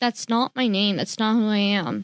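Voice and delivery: ordinary talk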